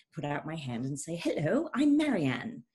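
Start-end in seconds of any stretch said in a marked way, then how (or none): 1.2-2.5 eager, raised put-on American accent. Recalling her first day of third grade, greeting a girl in an attempted American accent. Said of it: "so excited to try my new American accent".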